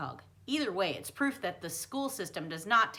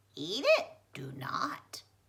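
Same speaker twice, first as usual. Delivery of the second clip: squawking, squeaky puppet voice, slow, swooping and sing-song; 5 semitones higher than usual. Leaning in as the narrator is about to eat, in a squeaky Origami Yoda voice. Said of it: "a squeaky voice squawked in my ear".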